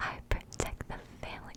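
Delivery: breathy, hushed, very soft whisper. Repeat the line exactly like she did, whispered so that listeners may not hear it. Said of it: "me whispering it, but I actually did it exactly like she did".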